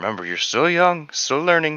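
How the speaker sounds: muttering quietly to himself. After the stone goes right through him, the character mutters to himself. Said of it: "He mutters himself".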